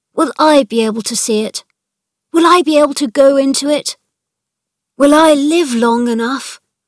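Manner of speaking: high, loud, repeated crying out. Colin, holding Mary's hands after hearing what she found, crying out. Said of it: "he cried out".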